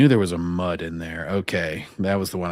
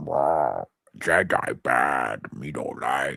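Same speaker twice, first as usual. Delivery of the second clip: deep, growly, very slow put-on droid voice; 5 semitones lower than usual. Imitating a growly droid talking about jedi: imitating a growly droid. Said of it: "growly whatever droid that's like".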